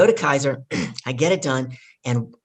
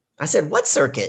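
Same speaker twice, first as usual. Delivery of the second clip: ordinary talk, nothing marked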